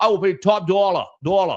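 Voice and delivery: put-on Northeastern American accent. Quoting what a man said, imitating a Northeastern accent. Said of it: "with the new Northeastern accent".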